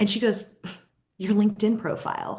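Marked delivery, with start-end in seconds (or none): 1.2-2.4 put-on flippant delivery. Retelling how a client answered a question about finding him: imitating a flippant reply. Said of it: "kind of flippantly".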